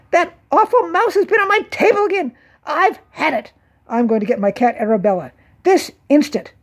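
high, squealing outburst. A woman speaks above the table where the mice hide: squealing. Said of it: "a woman's voice squealed".

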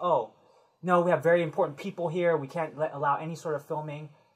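plain

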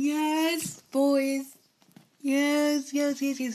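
strange, drawn-out cheer, very slow. Celebrating a correct guess in a football guessing game: odd excited cheering voice. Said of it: "I don't know why I'm talking like that".

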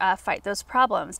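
plain

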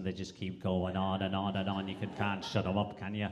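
Scouse accent, very low and soft. Demonstrating regional accents one by one, in a Scouse accent like Paul O'Grady. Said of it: "the Scouse accent".

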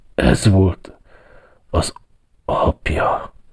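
very slow, quiet, hushed mumbling mutter. An old man turns toward a portrait on the wall, muttering quietly. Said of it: "motyogta halkan".

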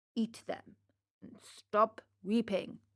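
ordinary delivery

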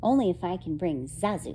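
plain

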